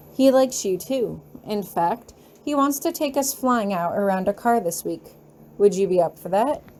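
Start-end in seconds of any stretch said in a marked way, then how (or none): none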